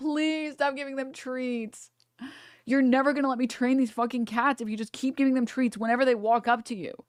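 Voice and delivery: high, begging plea. Retelling how they begged their family to stop giving treats: imitating begging. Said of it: "I begged my family".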